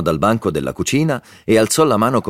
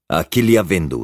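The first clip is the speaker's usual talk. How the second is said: usual speaking voice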